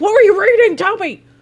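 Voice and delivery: mock intense, pushy, loud, high and aggressive. Retelling her own crazy-eyed question to a viewer: imitating her own aggressive question. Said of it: "crazy-eyed, and I was like".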